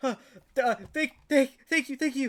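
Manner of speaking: breathless panting speech. Narrator voices a man just pulled out of the tar, panting while talking. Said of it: "you hear him panting as he just goes".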